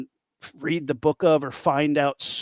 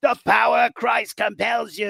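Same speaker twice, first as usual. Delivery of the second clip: put-on heavy New York accent, pitched up higher; 6 semitones higher than usual. Describing the real Ed Warren, quoting him in a heavy New York accent. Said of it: "he has a very heavy New York accent".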